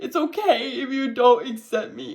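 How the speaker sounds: high, tearful, put-on sobbing through the words. Retelling coming out to parents: retelling own crying. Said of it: "I was crying".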